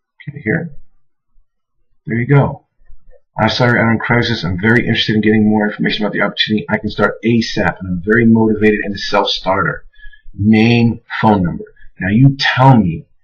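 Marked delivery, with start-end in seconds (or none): none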